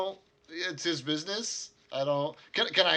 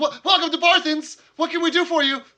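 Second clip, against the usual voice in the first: put-on very high, very loud, startled boy's yelp; 12 semitones higher, 9 dB louder than usual. Game narrator voicing the young boy behind the counter, jolted awake, startled. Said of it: "jolts up straight and says".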